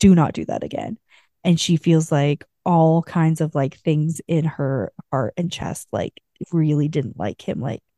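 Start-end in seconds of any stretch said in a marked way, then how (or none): 0.0-1.0 put-on stern voice. Retelling a book scene where he tells her off, imitating a reprimand. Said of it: "reprimands her".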